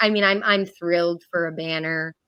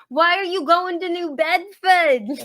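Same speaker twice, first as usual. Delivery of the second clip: put-on very high-pitched loud yell; 12 semitones higher than usual. The speaker quotes her mom from the other room, retelling a yell. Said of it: "from the other room yells".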